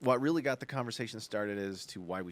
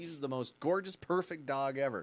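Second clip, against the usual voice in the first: plain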